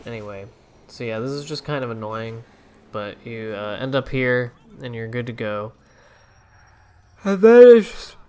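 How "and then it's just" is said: talking through a yawn, very high and loud. Explaining how to find the next target in a game, yawning mid-sentence. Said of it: "sorry, I'm yawning".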